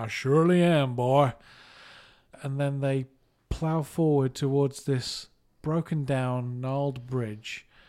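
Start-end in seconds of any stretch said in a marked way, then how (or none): 0.0-1.3 drawn-out, slow, loud put-on American accent. Retell a film scene where Bond answers the sheriff, in Roger Moore's best American accent. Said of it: "in his best American accent".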